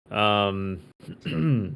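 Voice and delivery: ordinary talk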